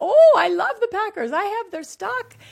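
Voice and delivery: put-on heavy European accent, high and loud. Quoting a man who answered him, in a strong European accent. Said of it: "with this strong European accent said".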